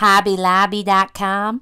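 put-on thick American accent. Quoting a lady met at Hobby Lobby, thick American accent. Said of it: "That's my best American accent".

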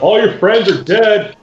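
shouted, taunting tone. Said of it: "Tyrannus will shout out".

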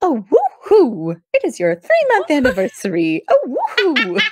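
put-on high, swooping, sing-song old-Hollywood transatlantic accent. Praising a character's voice to a co-speaker, doing Lorelai's transatlantic Emily voice. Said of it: "This is like transatlantic, like 1950s".

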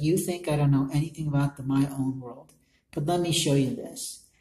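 normal talking voice

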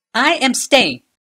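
resolute, firm, loud, very high-pitched. The queen answers the captain and the seneschal, firm. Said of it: "said Kayla firmly".

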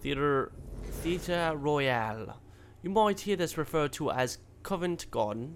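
jokey, fake, put-on British accent. Reading out information about the Theater Royale, in a put-on accent. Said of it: "I'll stop with the accent".

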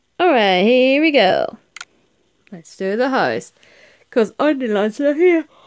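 words stretched out mid-yawn. Speaker greeting viewers while setting up, tired, yawning while talking. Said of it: "I can't stop yawning".

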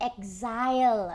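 stress on exile, drawn out slowly. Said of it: "I wanna stress that word".

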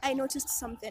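ordinary delivery

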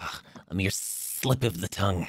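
irritated, agitated, breathy whispered grumble. Voicing a dragonborn who blurts a secret: agitated dragonborn voice. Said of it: "getting agitated with the long journey".

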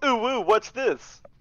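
high-pitched, mocking, teasing caricature voice. Talking to chat, doing an impression of Jugg walking over a corpse. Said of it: "is my impression".

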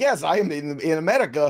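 put-on Russian accent. Answering another speaker with a Yakov Smirnoff impression. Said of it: "You sound like a Yakov Smirnoff kind of".

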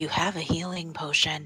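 whispering, hushed voice. Whispering to an injured companion in character: whispering. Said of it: "Vespers whispers to Je-, uh, to Gesh".

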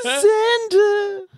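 very high, cracking squeak. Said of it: "and E Y goes".

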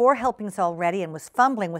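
plain

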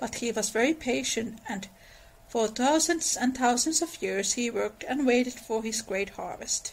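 plain

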